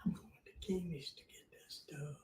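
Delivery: very quiet, hushed whisper under the breath. Speaker telling the other person where they're going, whispering. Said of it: "You don't have to whisper".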